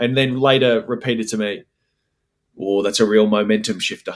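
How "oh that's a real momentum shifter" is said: put-on deadpan, straight-faced delivery. Retelling what Steve-O said about an overturned goal: imitating Steve-O deadpan. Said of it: "with a straight face".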